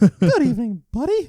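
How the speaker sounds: voice going way up, very high and loud. Asked to set a clock face to Mickey Mouse, the speaker demonstrates: Mickey Mouse voice. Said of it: "That's my Mickey Mouse impression".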